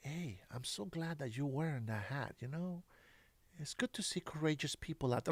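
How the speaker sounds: very soft, hushed, very quiet half-whisper. Retelling what people say when they come up next to him: imitating someone half-whispering. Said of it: ""Why are you whispering?"".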